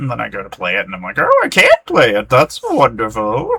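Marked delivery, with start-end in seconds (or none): 1.2-3.6 zany, crazy put-on voice, drawn out, swooping high. Retelling own reaction when a game won't run: crazy put-on voice. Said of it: "I don't know what my crazy voices I'm doing".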